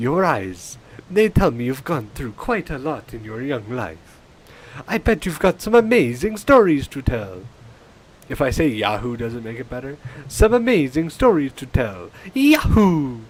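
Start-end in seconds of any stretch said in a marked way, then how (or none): 0.0-7.4 put-on Italian plumber voice, louder. Rehearsing a line, the speaker tries it again in a Mario voice. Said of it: "more Mario and less less Dracula".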